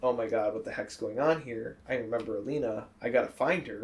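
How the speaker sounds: ordinary talk, nothing marked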